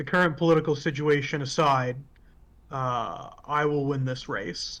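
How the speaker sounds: dead-serious, grave, very serious tone. Retelling what he says when he turns and looks at you, mock-serious voice. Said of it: "his whole voice changed. It's very serious now".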